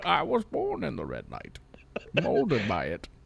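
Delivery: low, soft, rough, gritty villain rumble, swooping, menacing. Reacting to a complaint about a red light, speaker answers in a Bane voice. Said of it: "in a Bane voice".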